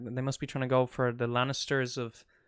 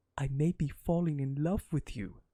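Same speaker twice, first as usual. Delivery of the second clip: put-on whisper. Recapping a show, the speaker acts out a character's line to her, retelling a whisper. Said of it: "Then he whispers in her ear".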